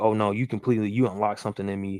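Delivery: normal talking voice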